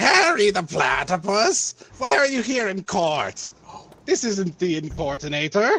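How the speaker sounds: high, swooping cartoon mad-scientist voice, pitch swinging wildly. Ordered in a mock trial, the defendant does a Doofenshmirtz impression. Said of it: "You must do your best Durban Schmertz uh, impersonation".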